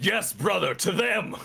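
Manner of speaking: very high, rough, rousing rallying battle cry. Voicing a character thrusting his sword skyward: rallying battle cry. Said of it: "punch his sword in his hand up to the sky and go".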